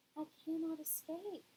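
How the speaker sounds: soft, hushed robot voice. Reading a story aloud, voicing the robot's line in a softer voice. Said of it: "in a softer voice the robot said".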